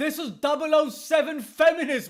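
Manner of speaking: ordinary talk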